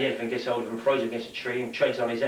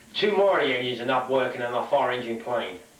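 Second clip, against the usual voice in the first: plain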